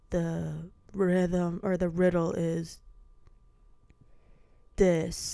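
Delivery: very slow, every word dragged out. Imitating a film character moving his mouth slowly: imitating very slow speech. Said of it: "his mouth would be like".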